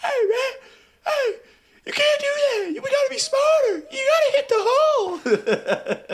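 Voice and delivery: high, unintimidating, drawn-out scolding with voice almost gone. Retelling a coach yelling at players with no voice: imitating Deuce with no voice. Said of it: "Deuce with no voice".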